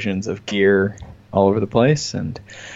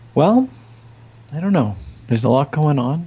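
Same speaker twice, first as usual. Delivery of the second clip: calm, smooth, soothing broadcaster voice, pitched up; 6 semitones higher than usual. Asked what's new, the speaker answers in a soothing NPR voice. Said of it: "you're using your NPR voice right now".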